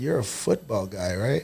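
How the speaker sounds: brief, short, soft-spoken and hushed. Retelling what a man said after walking away and turning back around: short, soft voice. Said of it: "he said it in that short, soft voice".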